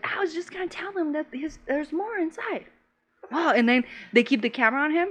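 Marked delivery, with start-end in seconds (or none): 0.0-2.6 mock small, scared, meek voice, soft and high. Retelling a commercial where a scared guy answers: little timid voice. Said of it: "he does it with his little voice".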